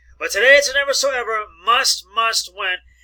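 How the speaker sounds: stress on must.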